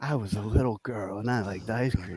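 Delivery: soft, rough, smoky, raspy voice. Retelling how a woman talked to him, imitating a raspy, smoky voice. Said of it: "talking in like a really raspy, smoky voice".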